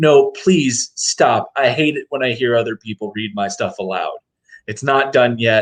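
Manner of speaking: agitated, anxious, flustered, freaking-out pleading. Retelling a comic scene where a notebook is read aloud: imitating someone freaking out. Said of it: "he's kind of, like, freaking out".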